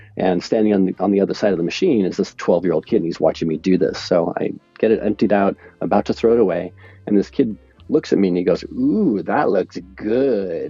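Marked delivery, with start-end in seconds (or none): 8.7-10.7 mock, very slow, swooping sarcastic drawl, "good" stretched. Telling a story about a twelve-year-old kid at a popcorn machine, retelling a sarcastic remark. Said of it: "all sarcastic and stuff".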